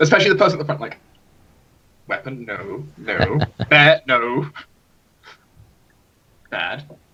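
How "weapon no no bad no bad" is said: very slow, condescending, scolding talking-down voice. Voicing a character lecturing the person at the front: condescending. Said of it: "almost condescendingly give out all this information".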